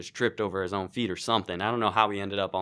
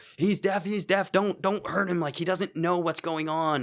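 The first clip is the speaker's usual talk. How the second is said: very high-pitched, nervous shouting; 9 semitones higher than usual. Retelling yelling at an off-duty cop: retelling own yell. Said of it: "you're yelling at a cop".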